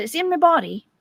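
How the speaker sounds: British woman's voice. Retelling a voice heard in a dream: imitating a british woman's voice. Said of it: "this British woman's voice said".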